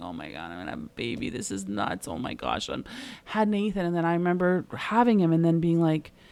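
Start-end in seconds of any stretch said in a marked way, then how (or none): 0.0-2.7 put-on tearful, breathy whisper with disbelief. Retelling sitting there pregnant years ago: imitating own past crying. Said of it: "sitting there crying".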